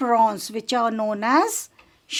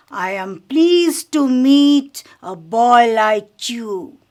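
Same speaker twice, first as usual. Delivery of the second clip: hoarse, rough, deep, heavy voice, slow and loud; 5 dB louder than usual. Telling a story, the speaker voices a character greeting Harry: heavy voice. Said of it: "This is the way with a heavy voice".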